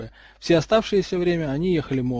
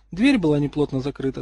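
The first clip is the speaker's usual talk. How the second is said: ordinary delivery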